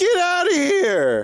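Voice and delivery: very high, shrieking scream right up close. Acting as a disguised goblin, shouting at an enemy: screaming in someone's face. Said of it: "I scream back in his face".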